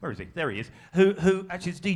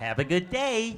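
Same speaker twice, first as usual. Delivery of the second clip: very bad put-on American accent, upbeat; 4 semitones higher than usual. Giving an example of how Americans sound, in a very bad American accent. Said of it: "That's my very bad American accent".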